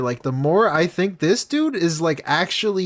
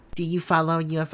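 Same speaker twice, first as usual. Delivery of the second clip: poorly done put-on baby voice, quieter; 5 dB quieter than usual. Asking her whether she follows UFOs, in a bad panda baby voice. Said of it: "he says it in the shitty panda voice, the baby voice".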